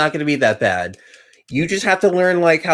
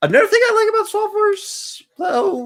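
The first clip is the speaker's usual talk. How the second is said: squeaky voice break, cracking very high. Talking about Swap Force during a Nightmare run, voice cracking. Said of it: "sorry, my voice cracked".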